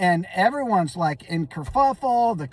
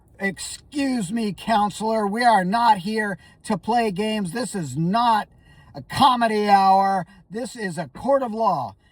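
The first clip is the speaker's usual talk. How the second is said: put-on angry voice. Retelling how the judge scolded the counselor in court: imitating an angry judge. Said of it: "she was mad".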